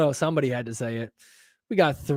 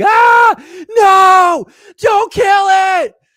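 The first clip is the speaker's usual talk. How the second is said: mock very high, loud, slow alarmed cry; 10 dB louder than usual. Retelling how everybody reacted to a worm almost being stomped: imitating people freaking out. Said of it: "They all freaked out like".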